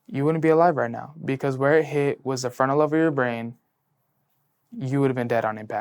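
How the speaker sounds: ordinary talk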